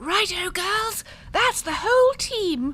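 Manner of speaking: ridiculous put-on English accent. A conspirator confirms the whole team is present, in a ridiculous english accent. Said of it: "this ridiculous capitalist English accent".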